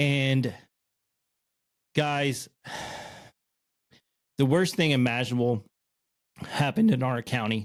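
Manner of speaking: breaking, cracking voice mid-sentence. Speaker telling viewers what happened in their county, voice cracking. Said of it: "my voice just cracked".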